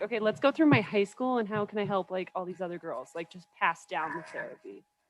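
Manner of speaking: normal talking voice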